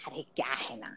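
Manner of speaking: low, unvoiced whispered aside.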